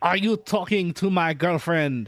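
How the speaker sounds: put-on heavy French accent, laid on very thick. Retelling a boyfriend confronting the speaker: thickest French accent. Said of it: "In the thickest French".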